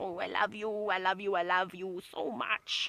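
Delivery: small, slow, drawn-out little animal voice. Narrating lions rubbing heads in greeting, giving them a little lion voice. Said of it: "I like to give them little voices".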